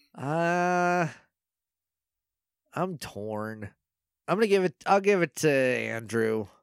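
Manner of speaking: reluctant and grudging. Co-host choosing a favorite between two characters from the episode: annoyed, grudging. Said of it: "You sound mad about that".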